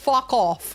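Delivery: Scottish-accented speech. Answering a chat troll who praised the accent: Scottish accent. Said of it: "That sounds really good in Scottish".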